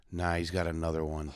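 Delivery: mock-solemn voice. Retelling what another person said in the car, mock-solemn retelling. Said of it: "Luke very solemnly goes".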